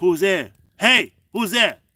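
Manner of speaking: building scream.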